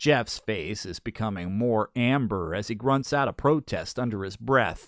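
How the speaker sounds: ordinary delivery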